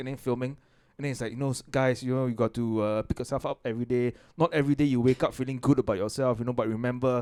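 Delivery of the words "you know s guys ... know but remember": plain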